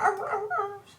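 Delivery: high, soft wolf-like whimpering yelps. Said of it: "and you hear the arr sounds".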